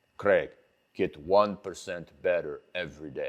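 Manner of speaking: very low, deep voice with bad put-on Austrian accent. Quote Arnold Schwarzenegger giving you advice, in a bad Arnold Schwarzenegger accent. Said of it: "that's the worst accent you will ever hear".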